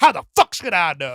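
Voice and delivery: acted, very loud, flustered, exasperated, frustrated outburst. Describing a video, the speaker quotes a man being questioned, mock-frustrated and flustered. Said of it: "a little more frustrated, a little more flustered".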